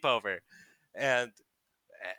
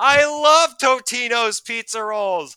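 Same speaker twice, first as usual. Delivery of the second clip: put-on very slow, loud, high drawn-out child's shout; 12 semitones higher, 13 dB louder than usual. Retelling kids eating pizza rolls in the kitchen: imitating a kid shouting. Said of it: "one kid just shouts like".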